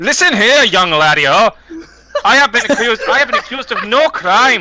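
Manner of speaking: mild, acted, stagey half-shout. A player's character shouts at a guard, voice magically amplified; shouting. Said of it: "As as you shout".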